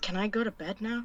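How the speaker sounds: muttering under breath. Voicing a character who mutters to leave for bed: under her breath. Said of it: "under her breath goes".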